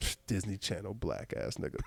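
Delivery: put-on mutter under breath. Retelling what a departing audience member said: imitating muttering under breath. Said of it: "under her breath".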